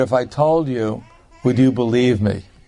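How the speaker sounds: put-on very grave, solemn, serious tone. Retelling a swami's answer to a sarcastic boy, in a very grave voice. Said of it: "in a very grave voice".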